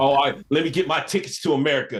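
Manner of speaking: mocking put-on voice. Mocking how someone claims ancestors came to America: imitating Ice J mockingly.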